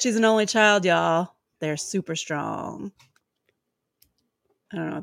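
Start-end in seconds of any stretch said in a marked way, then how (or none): 0.0-2.9 dry, sarcastic tone. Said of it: "She said sarcastically again".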